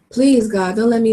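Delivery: ordinary talk, nothing marked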